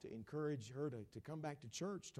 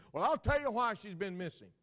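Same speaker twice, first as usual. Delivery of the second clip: very loud, raised, pitched-up announcing voice; 9 semitones higher, 13 dB louder than usual. Speaker retelling what a girl's mother said to them, in her loud voice. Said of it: "in her loud voice said".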